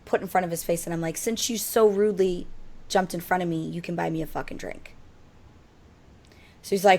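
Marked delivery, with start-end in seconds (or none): none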